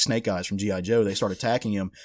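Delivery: ordinary talk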